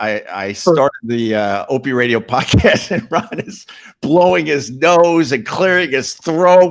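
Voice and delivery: words broken up by laughs. Starting a podcast while another speaker blows his nose: laughing while talking. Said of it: "I'm laughing".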